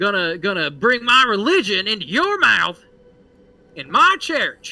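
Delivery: put-on high, loud, screaming old man voice, ranting. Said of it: "he just screams".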